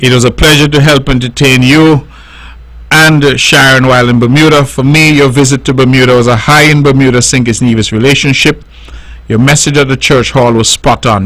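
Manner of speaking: ordinary talk, nothing marked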